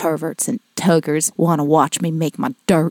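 low, creepy half-whisper, very close. Retelling what Matt half-whispered in their ear, imitating Matt's creepy half-whisper. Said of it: "he's like whispering it in my ear, all creepy".

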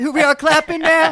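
mock kid voice, high, odd and goofy.

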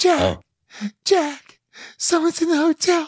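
very high, slow, drawn-out alarmed voice. Quoting a scene from The Shining: imitating Shelley Duvall. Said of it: "when Shelley Duvall goes".

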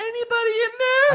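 very high, fake, put-on woman's voice. Recapping a scene where a character knocks on a door, in a put-on woman's voice. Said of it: "he does a woman voice".

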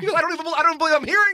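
acted-out scream. Speaker acts out a man screaming at him, retelling a scream. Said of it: "he just starts screaming at me".

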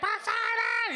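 very high, shrill calling-out yell. Retelling how a mother calls out to her son in the street: imitating a mother yelling. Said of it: "She starts yelling".

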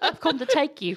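put-on mixed Australian and British accent, pitch way up. Acting out a book character speaking to Feyre, in a put-on accent. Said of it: "You're so good at accents".

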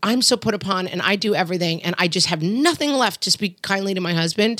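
usual speaking voice

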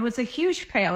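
normal talking voice

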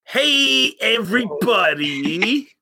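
very high-pitched, deliberately awful host-style announcer voice. Mocking the show's opening greeting: worst impression of the show greeting. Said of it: "worst impression I've ever heard".

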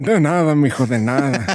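put-on elderly old man voice. Replying to a thank-you, putting on an old man voice. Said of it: "Me gusta mucho cuando lo haces".

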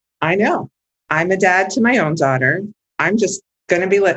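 plain

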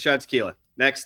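put-on flippant tone. Retelling answering customers who ask what to drink: imitating own flippant reply. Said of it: "I'm being flippant".

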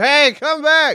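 high, acted-out screaming call. Retelling a drunk night when one of the group ran off: retelling screaming after someone. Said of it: "I'm like screaming his name".

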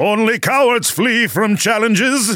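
very high-pitched charging yell. Shouting in character while chasing after Gidgel: yelling. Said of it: "Why are we yelling?".

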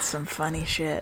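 most serious inflection. Remarking that something was funny, most serious inflection.

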